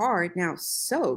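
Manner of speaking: ordinary delivery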